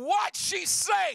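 put-on screaming, high-pitched. Recounting screaming at a crying interpreter: retelling own screaming. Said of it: "And I'm screaming at him".

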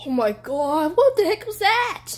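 frightened, high-pitched burst. Playing a game on video, startled by something on screen: scared. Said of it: "I'm so scared".

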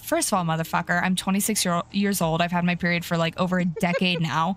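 plain

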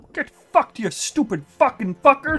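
very high, blurted-out swearing outburst. Cursing at a game enemy, sounding like Jordan Peterson. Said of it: "You sounded like Jordan Peterson then".

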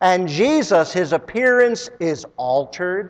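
ordinary delivery

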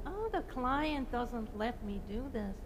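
whining, complaining voice, high and sing-song. The speaker mimics architects' old excuse about their clients, mock whiny voice. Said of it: "that whiny voice that".

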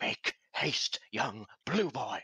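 high stage whisper. Player voicing a character shaking another by the shoulders, in a stage whisper. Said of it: "stage whispering to him".

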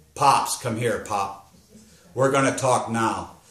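usual speaking voice

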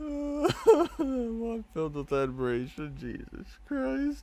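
very high, slow squeal through laughter.

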